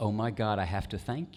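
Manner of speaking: put-on deeply emotional, weeping, tearful voice. Retelling a stranger's tearful thanks in a barbecue line: imitating a weeping woman.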